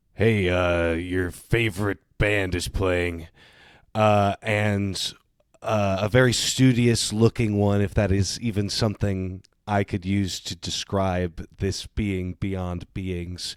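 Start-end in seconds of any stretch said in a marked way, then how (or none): 0.2-3.3 put-on voice sounding older than time itself. Voicing an indescribable being speaking to three others: voice that predates time itself. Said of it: "says in a voice that predates time itself".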